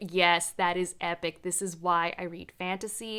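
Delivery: ordinary talk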